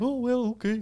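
very high-pitched, quirky voice. Before a lightning round, imitating Mister Wicker's quirky dad joke voice. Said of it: "that little, like, quirky voice that he has where, like, his dad joke voice".

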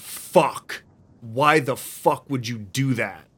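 loud, furious, enraged scream. Narrating a scene, voicing Knuckles as the creature jumps off the truck, screaming in anger. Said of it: "immediately Knuckles screams".

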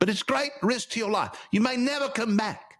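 high, light put-on British accent. Telling a story about a man sailing for spices, put-on british accent. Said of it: "I gotta work on my British".

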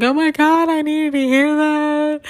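very high, loud, weepy, overcome tearful crying. Retelling what a woman said to her on the phone, imitating someone crying, upset. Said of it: "She's like all upset, crying on the phone".

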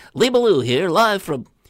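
thin nasal voice, pitched way up, loud. Retelling Bob's running bit as a reporter out in the field, nasal Lee Ballou voice. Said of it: "Bob puts a nasal tone in his voice and goes".

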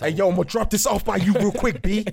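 loud, very high-pitched New York accent. Speakers joke about talking in a new york accent for a week; new york accent. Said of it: "Start talking in a New York accent".

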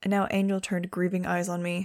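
plain reading voice

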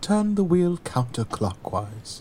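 starchy, stuffy British voice. Retelling a scene where a man instructs a racing driver, in a stuffy British man voice. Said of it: "this stuffy British man is like".

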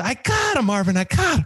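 play-acted breathless panting, words gasped between breaths. Retelling what the receptionist said coming back down the hall: imitating someone out of breath. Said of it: "She's out of breath and she's like".

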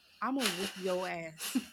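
calm, quiet, sincere menacing tone. Explaining how parents lean in after yelling, imitating a calm, sincere threat. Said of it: "that lean in and that calmness and that just sincerity".

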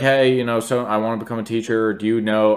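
plain

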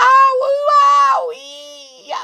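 very high, very loud, rough shrill yell, drawn-out "ow". Reading a story, Amelia is pricked by a holly bush; yelling. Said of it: "yelled Amelia".

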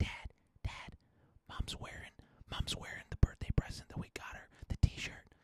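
very soft, unvoiced whisper right under the breath. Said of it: "they would come up and whisper about it".

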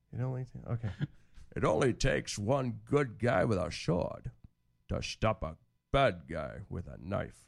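put-on Scottish accent. Asked by another speaker to read this, the speaker does a Sean Connery voice. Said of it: "Can you read this in Sean Connery voice?".

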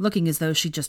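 plain

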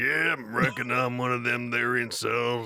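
put-on very slow, old-timey frontier Western voice. Retelling how Nathan voiced a guy, imitating an old-timey Western man. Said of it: "it sounded like he was like an old-timey Western man".

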